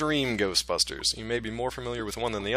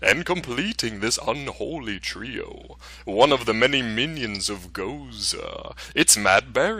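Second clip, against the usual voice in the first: put-on, eerie, spooky horror-host delivery. Putting the spooky voice back on to introduce a guest: spooky voice. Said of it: "I gotta put my spooky voice back on".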